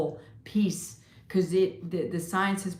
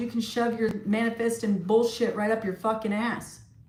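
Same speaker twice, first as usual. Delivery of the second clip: put-on scream, higher pitched; 3 semitones higher than usual. Retelling what a son said when he called: imitating son screaming. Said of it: "my son called me screaming".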